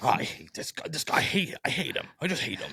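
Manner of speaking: muttered under the breath. Retelling how a commentator reacts to a wrestler: imitating Tony Schiavone muttering under breath. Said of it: "you just hear him go under his breath".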